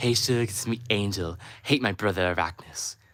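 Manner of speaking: coy, flirtatious, sweet-talking put-on character voice. Asked on stream to sound like Angel, doing Angel's voice. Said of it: "That's Angel's voice".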